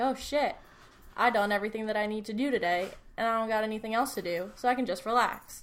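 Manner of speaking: ordinary delivery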